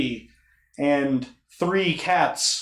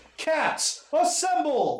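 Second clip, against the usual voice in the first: very high, swooping scream at top of lungs; 12 semitones higher, 4 dB quieter than usual. Voicing a character calling the cats together: screaming at the top of lungs. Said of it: "at the top of his lungs, screams".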